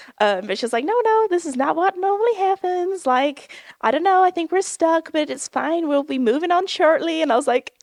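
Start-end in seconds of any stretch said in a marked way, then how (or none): 0.9-7.2 poor fake American accent, pitched up. Speaker imitates an American lady on a stuck ride, in a bad American accent. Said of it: "my American accent is so bad".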